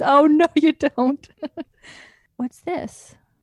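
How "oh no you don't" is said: loud, high, slow, drawn-out cheesy mock movie-hero voice. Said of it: "He literally says".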